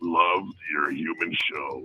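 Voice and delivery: put-on robot leader voice. Calling in to the show and praising it: Optimus Prime voice. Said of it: "an Optimus Prime impersonation".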